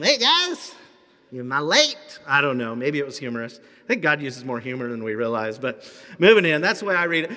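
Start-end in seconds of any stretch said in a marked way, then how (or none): 0.0-2.2 high, drawn-out helium voice, very slow. Imagining him walking into the room late, high helium voice. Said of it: "maybe we can imagine he just sucked helium".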